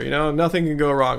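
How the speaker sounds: ordinary talk, nothing marked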